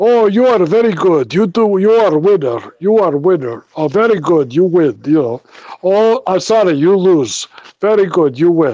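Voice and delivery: thick put-on Eastern European Bulgarian accent. Retelling what the dealer at the card game said, in a heavy Russian Bulgarian accent. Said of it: "very heavy sort of Russian Bulgarian accent".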